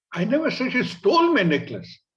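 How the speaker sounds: stole emphasized.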